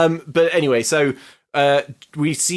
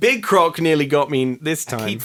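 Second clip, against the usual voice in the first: usual speaking voice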